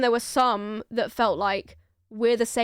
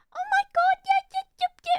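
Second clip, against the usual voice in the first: very high, chattering voice. Describing how other people talk to dogs, imitating people talking to a dog. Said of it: "neurotypical people will talk to dogs like".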